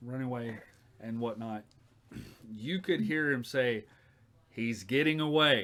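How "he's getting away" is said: loud, yelled-out voice. Voicing a character calling out as someone runs away: yelling out. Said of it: "That's what he yelled out".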